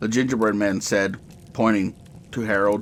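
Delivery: ordinary delivery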